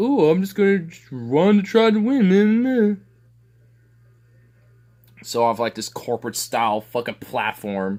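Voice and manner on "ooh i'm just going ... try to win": high, loud, mocking naive voice. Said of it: "that just are like".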